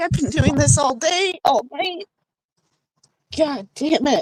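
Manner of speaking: choked-up, tearful, words breaking through crying. Speaker tells of a fresh breakup and is fighting tears, choked up, crying. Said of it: "I didn't want to cry".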